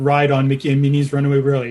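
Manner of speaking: rattled off fast and smoothly.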